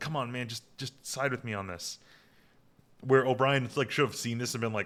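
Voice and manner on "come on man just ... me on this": stage whisper, much quieter. Retelling a TV scene where Nog turns to Jake, Nog's stage whisper. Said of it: "clearly whispers".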